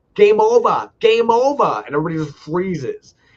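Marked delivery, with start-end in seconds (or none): 0.2-1.8 play-acted, loud, high, stretched-out shouting. Speaker retelling a man shouting to the other Taiwanese guys, retelling a yell. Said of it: "just starts yelling".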